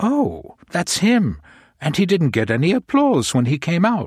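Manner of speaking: amazed, high, swooping astonished exclamation. A lady in the front row remarks to her companion, amazed. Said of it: "she said in an amazed voice".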